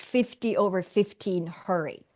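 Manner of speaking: ordinary talk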